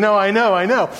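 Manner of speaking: said through laughter. Recalling Tony Hale pulling you aside during filming, retell your laughing reply. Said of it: "I'm kind of laughing going".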